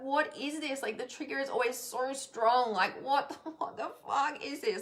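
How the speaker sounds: crying out, frustrated, confused, tearful and anguished. Retelling own question while upset over a post: imitating own past crying. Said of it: "I'm a crying emotional mess".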